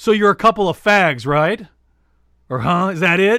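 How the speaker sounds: mock-forceful shouting. Retelling confronting two people while kidding, retelling a forceful yell. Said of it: "but I say very forcefully".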